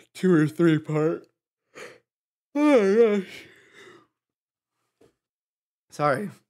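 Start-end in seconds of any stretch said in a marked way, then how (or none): 0.1-3.4 high, loud words spoken through a yawn. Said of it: "Sorry, I'm yawning".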